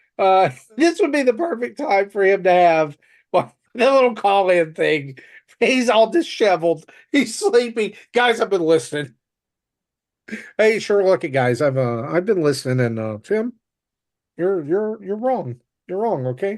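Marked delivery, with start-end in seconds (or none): 8.2-16.6 froggy puppet voice, halting and stammering. Speaker acts out a disheveled, just-woken man calling in, in a Kermit the Frog voice. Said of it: "Justin sounds like Kermit the Frog in my head canon".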